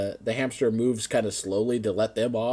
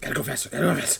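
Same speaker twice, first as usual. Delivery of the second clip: hamster voice, muttering, quieter; 6 dB quieter than usual. Voicing a hamster running a Ferris wheel: hamster muttering to himself. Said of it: "the hamster's muttering to himself".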